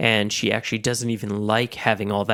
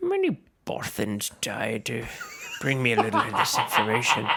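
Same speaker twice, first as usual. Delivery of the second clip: put-on sing-song Irish accent. Showing another person how they want a line said: irish accent. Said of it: "but with an Irish accent".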